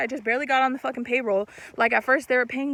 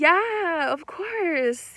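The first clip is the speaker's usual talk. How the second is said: high, fake, put-on polite customer-service voice; 5 semitones higher than usual. Showing how the speaker sounds when faking it for customers, fake customer service voice. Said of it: "I do fake my customer service voice".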